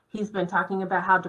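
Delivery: ordinary delivery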